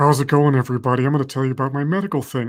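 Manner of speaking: put-on fake deep voice. Imitating the Theranos founder greeting viewers: fake deep Theranos voice.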